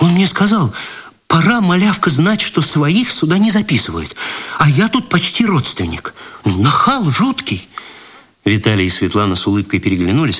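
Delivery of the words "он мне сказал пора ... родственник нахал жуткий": high, outraged, offended, indignant tone. A thin cloakroom girl answers Vitaly's question, indignant. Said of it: "с возмущением ответила".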